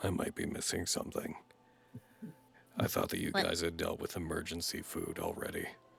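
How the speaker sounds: hushed, very quiet, strangely sincere, earnest whisper. Voicing Kathos leaning over to ask Lilia: very quiet, oddly earnest. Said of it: "very quietly and oddly earnestly is like".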